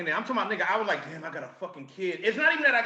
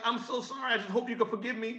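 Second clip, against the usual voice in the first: put-on tearful voice, higher and quieter; 5 semitones higher, 5 dB quieter than usual. Retelling a late-night apology from a woman who was crying: imitating someone crying. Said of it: "She's crying, and she's like".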